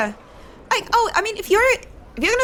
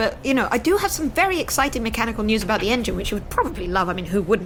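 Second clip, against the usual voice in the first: ordinary talk, nothing marked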